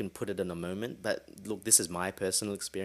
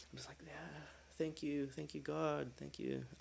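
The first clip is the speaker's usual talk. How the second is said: put-on crying, much higher, quieter; 8 semitones higher, 10 dB quieter than usual. Retelling a moment of joy at the valley, acting out crying thanks. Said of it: "And I'm crying".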